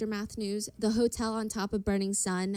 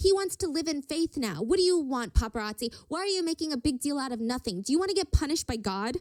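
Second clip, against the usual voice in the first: mock frantic clucking mother hen voice; 5 semitones higher than usual. Retelling a story, the speaker acts out a man's mom, clucking like a crazy mother hen. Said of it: "starts clucking away like some crazy mother hen".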